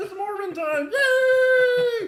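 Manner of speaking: very high, loud, slow frog squeal, stretched "yay". Answering a chat request to say the line: Kermit voice. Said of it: "in the Kermit voice".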